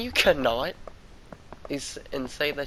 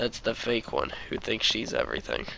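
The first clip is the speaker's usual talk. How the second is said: ordinary delivery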